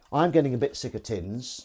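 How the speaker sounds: normal talking voice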